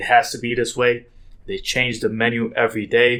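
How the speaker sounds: normal talking voice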